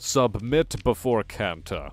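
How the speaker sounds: synthesized, artificial, machine-like voice. Narrating a scene, voicing the figure on the throne: booming synthesized voice. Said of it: "A synthesized voice booms from the throne".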